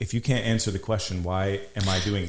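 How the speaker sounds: normal talking voice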